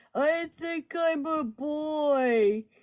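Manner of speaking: put-on tearful crying little child voice, very slow. Retelling what kids say when they come home: imitating a crying kid. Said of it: "the kids would come home crying".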